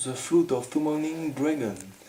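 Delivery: bad, fake put-on English accent. Listing the cards of a dragon deck, saying one english card name in a bad english accent. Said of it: "avec l'accent anglais".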